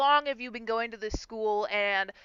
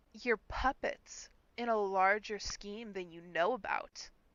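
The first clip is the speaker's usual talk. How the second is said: whispered, hushed, held-back, barely hidden disgust; 2 semitones lower, 14 dB quieter than usual. Describing a character who steps back before walking off: imitating barely hidden disgust. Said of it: "trying to hide her disgust".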